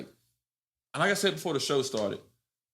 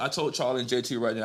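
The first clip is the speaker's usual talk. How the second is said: ordinary talk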